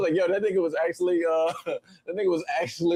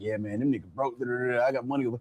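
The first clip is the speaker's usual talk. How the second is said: low, hushed, muttered boastful tone; 6 semitones lower, 5 dB quieter than usual. Retelling what someone said under his breath: imitating someone saying it quietly. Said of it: "he was trying to say it quietly".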